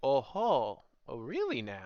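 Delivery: acted out, theatrically intrigued, swooping, curious drawl. Recalling how the king's voice changed, a speaker mimics it in a mock-intrigued voice. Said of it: "pure intrigue".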